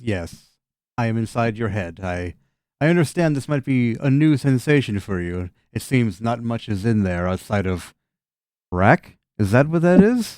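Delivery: creature voice talking through a chuckle, amused. Game master voicing a creature speaking telepathically inside a player's head, chuckling creature voice. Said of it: "The creature kind of just chuckles and says".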